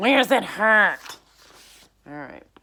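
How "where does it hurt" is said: very loud, bellowing, ghoulish nurse voice. Narrator voicing the school nurse said to be a ghoul, Miss Hurst voice. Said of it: "We're going to go with that voice".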